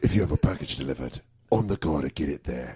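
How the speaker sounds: very low, deep action-hero voice. Rideshare driver talking to passengers, in a Jason Statham Transporter voice. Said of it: "I would just talk in a transporter voice".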